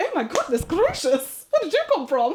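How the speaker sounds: put-on swooping upper-class English accent. Irish speaker retelling what people in Windsor said to her; posh English voice. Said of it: "Windsor is super posh".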